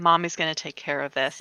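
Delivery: plain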